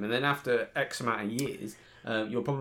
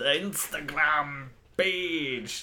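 deliberately bad Scottish accent, drawn-out "page"; 4 semitones higher than usual. Joking about posting pictures online: very poor scottish accent. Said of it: "very, very poor Scottish accent from both of us".

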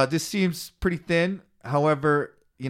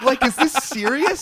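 imitated panicked voice, higher; 10 semitones higher, 4 dB louder than usual. Retelling own words while waiting for a court hearing: imitating own panic. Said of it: "And I start freaking out".

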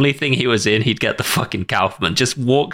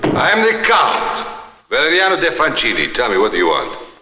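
swooping, animated voice with big pitch swoops; 3 semitones higher than usual. Retelling a scene where a count enters a room: imitating the Count. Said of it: "I believe he says".

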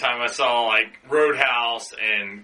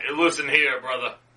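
put-on laid-back, chill character voice. Imitating a movie character who is pretty chill about avenging his brother. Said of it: "He's like".

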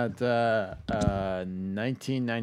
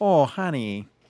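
put-on sweet-lady Michigan accent, raised and loud; 3 semitones higher, 6 dB louder than usual. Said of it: "She's got that Michigan accent".

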